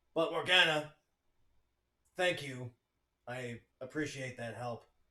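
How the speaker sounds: gruff, manly male voice. Playing Ash Gray, speaking to another character, in a gruff Ash Gray voice. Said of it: "Ashgray's a bit of a gruff man".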